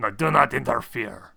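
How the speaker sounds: snarling, hissing, rough monster voice. Answering the preacher's question, the creature speaks in a hissing, snarling voice. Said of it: "It hisses and then just kind of snarls".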